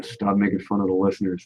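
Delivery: muttered, mumbled remark, half under the breath. Retelling what was said into the microphone, imitating own mumbling. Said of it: "I just mumbled into the microphone".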